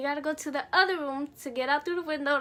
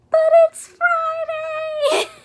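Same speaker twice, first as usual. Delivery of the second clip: very high, very loud half-shout; 14 semitones higher, 12 dB louder than usual. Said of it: "whisper yelling at them".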